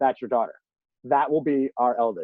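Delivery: ordinary talk, nothing marked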